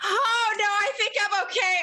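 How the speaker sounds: loud, high-pitched call. Asked whether they can stand or need help, the character answers very loudly. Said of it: "I say very loudly".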